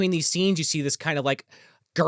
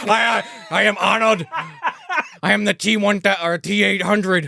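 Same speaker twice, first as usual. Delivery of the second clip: bad put-on Austrian-accented robot voice, higher pitch; 3 semitones higher than usual. Joking about a movie robot: horrible Arnold impression. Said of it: "It's a horrible Arnold impression".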